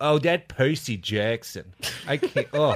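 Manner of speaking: put-on drawn-out New York accent, mother voice.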